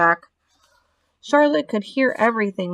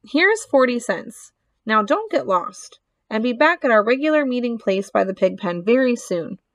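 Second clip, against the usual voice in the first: usual speaking voice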